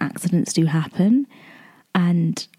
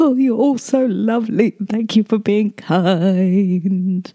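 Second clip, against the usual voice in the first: drawn-out sobbing, crying through tears; 3 semitones higher than usual. Recalling thanking others for their reassurance, retelling own sobbing. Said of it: "Literally sobbing through the tears".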